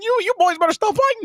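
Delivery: little cartoon mouse voice, very high pitched. Imagining a cartoon character scolding two people fighting: Mickey Mouse voice. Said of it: "I can just imagine that Mickey Mouse in the back".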